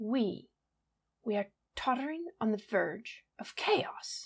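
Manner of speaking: loud theatrical stage whisper, half-voiced and hushed. Reading a story aloud, a character voices alarm: stage whisper. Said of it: "added Markham in a stage whisper".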